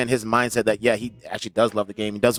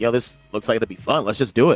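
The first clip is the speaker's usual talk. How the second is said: ordinary talk, nothing marked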